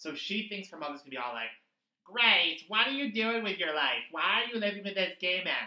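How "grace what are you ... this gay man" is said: loud, disapproving, scolding mom voice. Recapping an episode, voicing the daughter's mother confronting her: Debbie Reynolds impression. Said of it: "This is my Debbie Reynolds impression".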